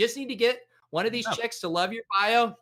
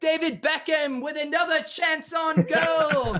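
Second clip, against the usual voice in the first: very high, fake English commentator accent; 9 semitones higher, 4 dB louder than usual. Asked to do chances on goal in an english accent, giving it a try. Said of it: "you want to do chances on goal in an English accent?".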